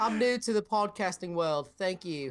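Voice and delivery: weird mixed European British accent. Podcast co-host, put on the spot, tries out an accent: weird european british accent. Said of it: "That is weird European British".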